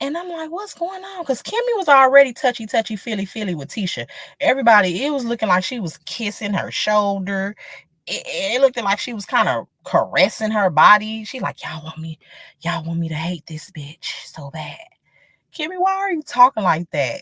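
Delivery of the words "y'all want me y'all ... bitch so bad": put-on low, raspy voice, quieter. Telling listeners what Kimmy said, imitating Kimmy's low raspy voice. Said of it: "put on her little low raspy voice".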